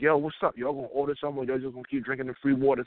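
ordinary talk, nothing marked

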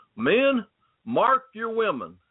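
put-on light Southern US accent. Speaker voicing a quoted instruction to men, light Southern US accent. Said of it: "I use a little southern accent".

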